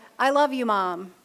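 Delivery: plain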